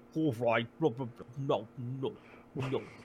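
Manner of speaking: low, soft, blubbery fish-creature voice. Describing how they'd voice a character, showing it in a blubbery fish voice. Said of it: "make the voice sound like a blubbery fish".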